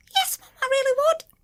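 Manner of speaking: very high-pitched, squeaky little put-on voice. Answering as him, the way he talks: high-pitched put-on voice. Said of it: "that's how he talks, high pitched".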